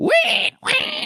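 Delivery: very high-pitched squeal like a pig.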